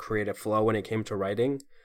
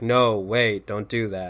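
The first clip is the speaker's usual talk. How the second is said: mock dry sarcasm, much slower; 4 dB louder than usual. Recounting a Willy Wonka movie scene, imitating a sarcastic tone. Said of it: "in that very sarcastic tone".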